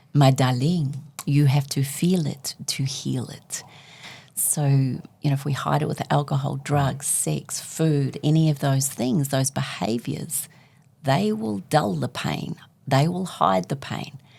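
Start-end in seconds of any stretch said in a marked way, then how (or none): 0.1-3.6 put-on French-accented speech. Quoting a line a woman once said to them: Jacqueline's French accent. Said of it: "in her French accent".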